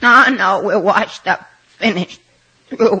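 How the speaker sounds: sobbing, tearful blubbering through the words. Complaining after failing to find an affordable hotel, crying. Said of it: "stop the crying instantly".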